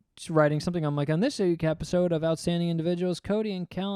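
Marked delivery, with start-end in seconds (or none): none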